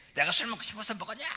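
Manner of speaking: high, fast, angry tone. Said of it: "막 성질 내면 지도 성질을 내는데".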